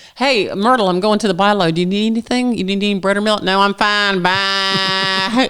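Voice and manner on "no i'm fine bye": put-on goat-like elderly voice, higher and slower. Retelling phone calls to a neighbor in her eighties, imitating Myrtle's nanny-goat voice. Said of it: "Nanny goats".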